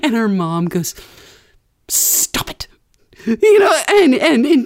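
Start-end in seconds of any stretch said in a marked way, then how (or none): 1.9-2.7 upset, angry, breathy whisper. Retelling the mother's reply to a teasing cousin, imitating an upset, mad mom. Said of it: "seeing her mom get all upset and mad".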